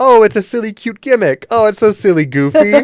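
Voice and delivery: very high, loud, cutesy, dismissive cooing. Retelling how the players at the table reacted: imitating the players' reaction. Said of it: "all the players at the table went".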